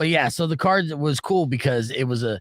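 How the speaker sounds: ordinary talk, nothing marked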